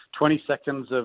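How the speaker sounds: usual speaking voice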